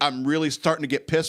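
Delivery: normal talking voice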